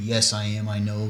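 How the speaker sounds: usual speaking voice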